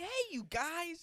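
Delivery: high, slow, drawn-out put-on character voice. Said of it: "this is how he's talking".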